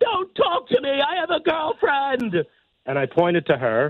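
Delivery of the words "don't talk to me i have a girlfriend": put-on, very high-pitched, joking scream. Retelling a joke at a bar when a girl asked about the stool, retelling a joking scream. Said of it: "I screamed out".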